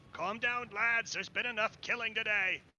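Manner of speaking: very loud, high, shrill beast-like yell. Narrating the scene, voice the werebore yelling over the guards: loud yelling werebore. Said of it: "who's really loud, yelling over the top of them".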